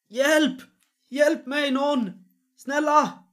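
shrill, shrieking, very high, very loud scream. Narrating to players, the speaker voices someone banging on a door: screaming for help. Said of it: "någon skriker".

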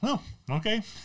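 high, cheerful, unbothered and cheeky tone.

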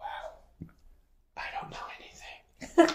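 shocked, hushed whisper.

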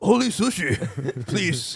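fake, put-on Japanese accent. Joking about wanting only sushi: put-on Japanese accent. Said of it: "I don't know why the guy's a Japanese accent".

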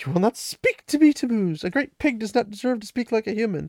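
very high, cutting, furious scolding. Recapping a story, voicing Aludra as she lays into Tammuz: retelling Aludra's furious scolding. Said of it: "And she just starts laying into [name]. / And the one Rand recognizes as Aludra is extremely upset. And she just starts laying into [name]".

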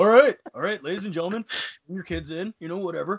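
put-on Southern California hippie voice. Acting out a rabbi running the space laser: southern california hippie voice. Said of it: "he's a hippie from, like, Southern California".

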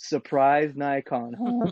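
put-on dry, sarcastic, swooping repeat. Retelling how someone repeats a pun back: mock-sarcastic repeat. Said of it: "He'll just repeat it back to me in a sarcastic tone".

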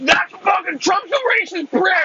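shrill, very high, loud screaming. Acting out an opponent in an argument: mock screaming. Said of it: "now you're screaming".

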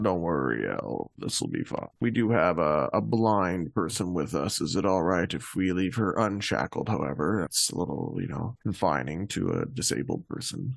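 low, soft, reassuring character voice.

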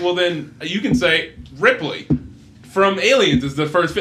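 ordinary talk

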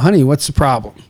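ordinary talk, nothing marked

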